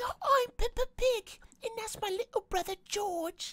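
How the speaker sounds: cute, high, squeaky voice. Speaker saying they love how Peppa Pig talks, doing Peppa Pig voice. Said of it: "I love Peppa Pig's voice. She's like".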